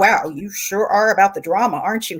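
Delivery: mutter under the breath. Retelling a remark made at dinner at his mom's: imitating a mutter under the breath. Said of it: "He kinda muttered under his breath".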